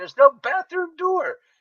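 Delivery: put-on very high, loud shouting. Retelling yelling back at the man: retelling own yell. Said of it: "me and this guy are yelling at each other".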